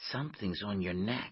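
usual speaking voice

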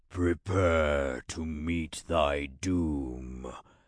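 very deep, echoing, spectral ghost-like voice. Narrator reads an armored rider addressing a swordsman: deep, echoing voice. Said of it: "came a deep, echoing voice".

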